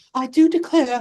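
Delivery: proper woman's voice. Describing how the film's villain was originally going to be, do a prim and proper woman voice. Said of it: "like this prim and proper woman".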